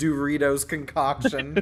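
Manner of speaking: ordinary talk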